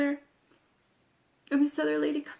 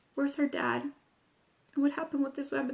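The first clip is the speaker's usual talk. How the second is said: ordinary delivery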